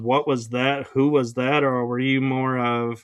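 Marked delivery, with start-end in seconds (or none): none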